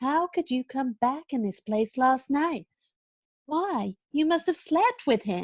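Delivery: gentle, hushed voice. Blanche, told by Stella to stop yelling, repeats her question quietly. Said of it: "I will repeat the question quietly now".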